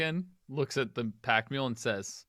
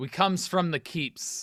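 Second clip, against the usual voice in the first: high-pitched shouting, yelled back; 5 semitones higher, 3 dB louder than usual. Voicing a character who yells back at a crossbowman: yelling back in character. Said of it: "Ophios is gonna yell back and just say".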